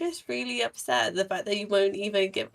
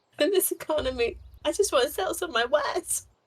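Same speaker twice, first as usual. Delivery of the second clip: slightly hysterical, half-wailing, loud, high fake sobs; 6 semitones higher than usual. A character carries on a spiel to buy the group time, loud fake crying. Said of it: "I'm like loudly fake crying".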